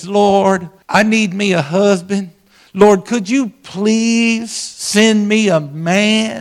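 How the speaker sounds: very slow, high-pitched hillbilly drawl. Retelling a character's line from a play; hillbilly accent. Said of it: "talking with a real kind of hillbilly accent".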